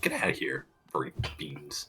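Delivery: tiny, very quiet little voice. Retelling what he would say when shooing, in his little voice. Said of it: "say in his little voice that he does".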